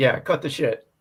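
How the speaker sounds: ordinary delivery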